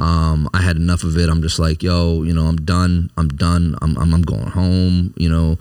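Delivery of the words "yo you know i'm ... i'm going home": ordinary talk, nothing marked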